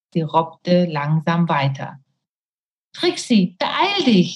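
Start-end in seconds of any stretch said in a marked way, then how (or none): 2.9-4.3 high, desperate calling out. The narrator, unable to hold on much longer, calls to trixi: desperate call. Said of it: "rief ich verzweifelt".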